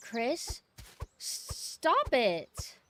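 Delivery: very slow, drawn-out, insecure, upset schoolgirl voice. Retelling a game villain's line: imitating Wesker as an insecure upset schoolgirl. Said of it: "insecure, kind of, like, upset schoolgirl way".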